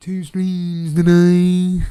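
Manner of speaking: very loud, silly cartoon teacher voice. A streamer talking to viewers slips into a voice, South Park teacher voice. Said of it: "Why am I talking like this?".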